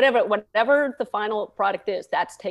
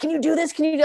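pitched-up, loud yell; 7 semitones higher than usual. Recalling a blown cue on set, acting out Jake yelling up at them, retelling someone yelling. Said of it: "Jake is yelling at me".

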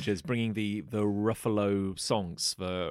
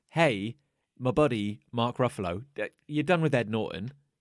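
normal talking voice

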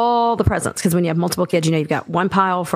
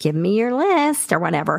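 witch-like storybook witch tone. Voicing a mom's text asking for the christmas list, in a witch-like voice. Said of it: "that sounded like a witch".

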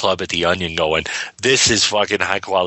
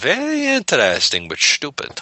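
put-on German accent, higher pitch; 8 semitones higher than usual. Quoting a catchphrase right after naming Artie Johnson: Artie Johnson German accent. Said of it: "use my German accent there".

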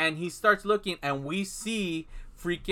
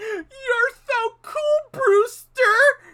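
put-on booming, very slow, very high laugh-talk; 10 dB louder than usual. Retelling a movie scene, imitating a line said while laughing. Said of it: "It basically says it like that".

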